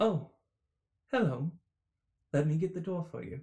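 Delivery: welcoming, polite, smiling, friendly tone. Game master voicing a satyr who greets the players at a door, smiling friendly greeting. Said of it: "he sort of sees you and he smiles and goes".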